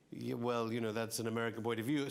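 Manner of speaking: usual speaking voice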